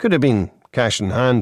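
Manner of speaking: plain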